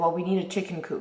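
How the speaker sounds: ordinary delivery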